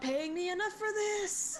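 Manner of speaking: high, drawn-out yell. Playing a character fleeing a terrifying growl, yelling while running to the exit. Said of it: "You can hear me yell as I run".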